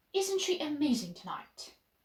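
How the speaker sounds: pitch drops away on the word tonight. Speech act example, a question said as a statement: falling intonation at the end. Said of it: "and use a falling intonation".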